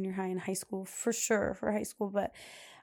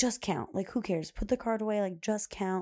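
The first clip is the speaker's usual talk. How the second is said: ordinary talk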